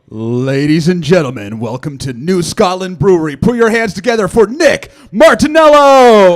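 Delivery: very loud announcer call. An announcer introduces the next comedian at the brewery: deep masculine announcer voice. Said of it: "So deep and masculine".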